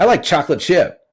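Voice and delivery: bright, upper-register voice. Showing how students answer when asked their favorite cookie: imitating a higher-pitched answer. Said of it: "it's higher in pitch".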